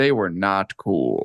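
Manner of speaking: low voice-over narrator delivery. Chiming in on another speaker's story, in a narrator voice. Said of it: "Narrator voice".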